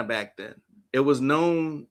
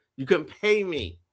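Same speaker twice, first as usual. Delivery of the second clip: ordinary talk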